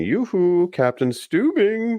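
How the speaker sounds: very high-pitched hollered call. Retell the last Scarecrow scene as he calls to the Captain, imitating yelling in Scarecrow voice. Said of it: "and he's yelling".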